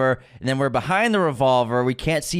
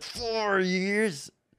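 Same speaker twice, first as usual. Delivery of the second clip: mock grunt, much quieter; 7 semitones higher, 8 dB quieter than usual. Retelling a woman's reply with a friend, imitating her grunted question. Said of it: "She grunts it".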